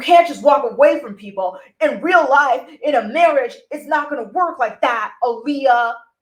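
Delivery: loud, angry lecturing tone. Acting out an angry man's line to Aaliyah, mock-angry. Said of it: "you can hear it in his voice that he's angry".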